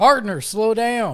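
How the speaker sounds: very high, loud yell. Calling out in character to a man walking up ahead: yelling. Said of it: "I'm gonna yell".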